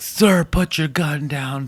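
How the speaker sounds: slow, deliberate, measured police-officer tone. Retelling a traffic stop, the cop's order to the armed man: imitating a cop yelling commands. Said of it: "he's yelling commands at this guy".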